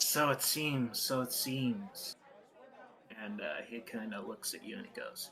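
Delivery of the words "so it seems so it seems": slow, drawn-out, hissing reptilian lizard voice. Voicing a character replying before slinking off out of the arena, in a hissing voice. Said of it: "He hisses".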